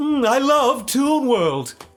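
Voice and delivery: very slow, very high-pitched, drawn-out anime voice. Recalling an anime character's line: Maximilian Pegasus voice. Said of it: "That's his voice, by the way".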